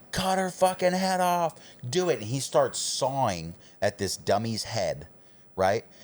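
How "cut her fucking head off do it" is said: mock screaming, pitched very high. Telling a story, re-enacting screaming at a man sitting in front of him. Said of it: "I'm screaming at him".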